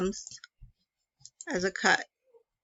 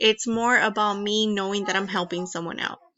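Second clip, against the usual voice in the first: ordinary talk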